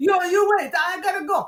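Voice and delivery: high-pitched, panicked screaming yell. Retelling a lost camera panic in a colleague's words: imitating Deodato screaming. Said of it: "he's screaming, his arms flailing".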